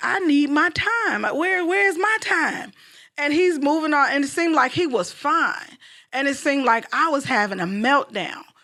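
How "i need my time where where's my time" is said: frustrated, worked-up, upset voice, pitched up. Retelling how she used to complain about her busy husband, acting out being upset. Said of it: "I used to get really upset because I'm like".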